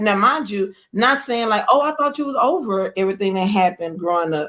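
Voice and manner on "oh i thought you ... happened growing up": usual speaking voice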